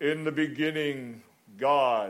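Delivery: grand, storyteller-style narrator voice. Speaker retelling how a light show's narrator opened Genesis, in a booming narrator voice. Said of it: "the narrator begins in this booming voice".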